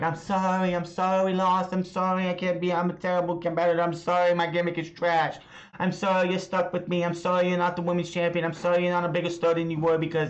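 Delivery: grovelling, begging, pleading tone. Retelling a wrestler apologizing to her partner after a loss: imitating Nikki pleading. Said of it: "trying to plead her case with Rhea Ripley".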